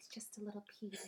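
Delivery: whispered voice. Retelling what is said to calm a partner down: retelling a whisper. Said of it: "And I'll whisper".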